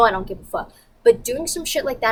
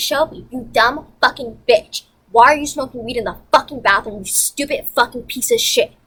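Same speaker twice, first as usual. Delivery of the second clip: angry, furious outburst, ranting; 3 dB louder than usual. Retelling cursing out shelby for smoking in the bathroom: imitating own angry outburst. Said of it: "And I'm pissed".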